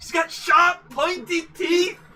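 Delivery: put-on Scottish accent, very high and slow. Quoting Tim the Enchanter from Monty Python: put-on Scottish accent, quoting Tim the Enchanter. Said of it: "Oh god, what was that?".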